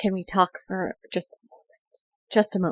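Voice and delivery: murmured under breath. Player voicing a character, quietly asking another for a moment to talk, murmured under breath. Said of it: "I'm gonna try to murmur under my breath".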